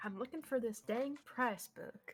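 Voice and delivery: put-on Southern-accented voice. Voicing the shopkeeper searching for a price book: shopkeeper in a southern accent. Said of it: "She knows a southern accent".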